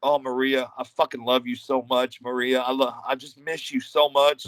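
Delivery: whispered voice. Retelling how a wrestler whispered in the speaker's ear during a hold: imitating Rod whispering. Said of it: "Rod starts whispering in my ear".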